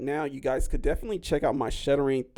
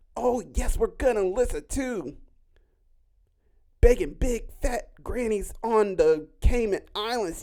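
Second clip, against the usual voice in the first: hollow fake enthusiasm, pitched up; 8 semitones higher, 3 dB louder than usual. Speaker mocks people who fake excitement to hook listeners, imitating fake hype voice. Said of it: "those fake people that try and get you hype".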